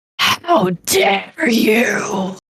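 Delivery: awful, furious, otherworldly voice, reverberating. Narrator voices a creature speaking telepathically inside the listener's head, enraged eldritch voice. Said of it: "you hear an awful voice in your mind go".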